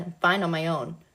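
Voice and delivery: plain reading voice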